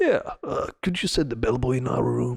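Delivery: put-on elderly old man voice. Retelling a call at the front desk, voicing the caller: old man voice. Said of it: "Old man voice".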